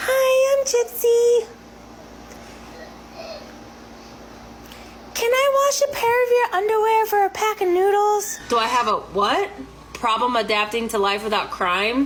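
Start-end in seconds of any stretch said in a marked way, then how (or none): 0.0-8.4 very high-pitched voice. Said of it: "So she used to talk like this".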